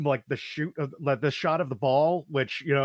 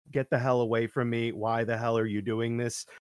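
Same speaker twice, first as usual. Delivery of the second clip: put-on deadpan delivery, much lower pitch; 4 semitones lower than usual. Describing a famous man snapping at a documentary crew, imitating a deadpan reply. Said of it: "he is just so deadpan".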